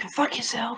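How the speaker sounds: barely audible, very quiet, hushed whisper. As the curtains close at the end of the scene; whispering. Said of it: "and I just whisper".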